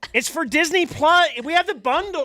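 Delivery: mock screaming. Retelling Jordan demanding a streaming password: imitating Jordan screaming. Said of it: "she's screaming".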